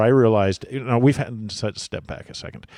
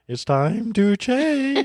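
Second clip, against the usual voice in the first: slow, with voice cracking up very high; 13 semitones higher than usual. Joking about a voice crack, doing a quick Peter Brady line: Peter Brady voice crack. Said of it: "I do a little Peter Brady".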